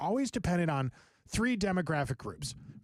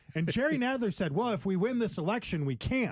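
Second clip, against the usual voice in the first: normal talking voice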